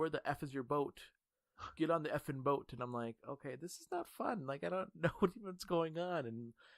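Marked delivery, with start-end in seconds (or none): 0.0-2.7 put-on yelling. Recalling a game session, acting out one player yelling at the speaker. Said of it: "this one guy was yelling".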